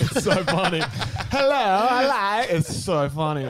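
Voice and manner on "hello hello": put-on very high, loud Eastern European accent, belted. Retelling how a guy approached two girls, in a Borat accent. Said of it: "goes straight into Borat accent".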